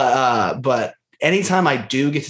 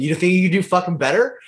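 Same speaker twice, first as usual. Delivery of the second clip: mildly upset, peeved, quick and high-pitched; 6 semitones higher than usual. Retelling what a guy said after overhearing the speaker mutter about his shot, imitating an upset guy. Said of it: "the guy got a little upset".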